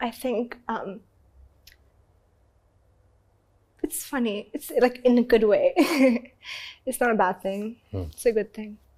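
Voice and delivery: tearful, crying while talking. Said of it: "Why are you crying?".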